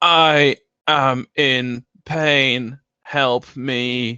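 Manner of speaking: very slow, metallic, grating, tinny loudspeaker robot voice. Voicing a robot speaking through poor loudspeakers: grating metallic robot voice. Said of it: "a grating metallic voice".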